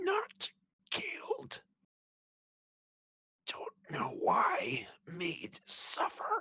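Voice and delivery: feeble, weak goblin voice, petering out. The game narrator voices a goblin answering how he survived, weakening goblin voice. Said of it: "my throat's going trying to do this voice".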